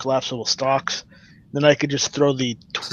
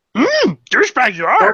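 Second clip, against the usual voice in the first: little green man voice, much higher pitched; 11 semitones higher, 6 dB louder than usual. Doing the one voice the speaker can do really well, Yoda voice. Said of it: "little green man".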